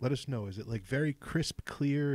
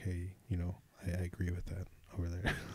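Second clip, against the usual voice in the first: put-on whisper, lower and quieter; 5 semitones lower, 5 dB quieter than usual. Retelling quiet comments made over the other speaker: imitating own whisper. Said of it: "as a nice whisper, like".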